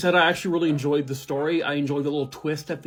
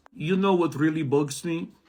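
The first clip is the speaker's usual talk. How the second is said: put-on French accent, weak and barely landing. Reading a joke off a card as instructed: French accent. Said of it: "Read the joke in a French accent".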